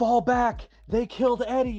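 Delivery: very high, shrill shout. Voicing an enemy who calls the retreat: yelling enemy soldier. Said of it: "this one just yells".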